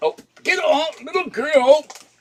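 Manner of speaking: very high, sudden, loud startled yell. Startled when a little girl walks onto the keyboard, yelling at her. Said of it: "Sorry to yell at you".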